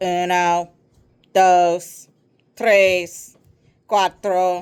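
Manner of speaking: loud, dull, flat electronic robot monotone. Narrator voicing a friend counting like a robot, dull electronic robot monotone. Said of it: "speaking in a dull, electronic monotone voice".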